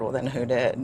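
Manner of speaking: ordinary talk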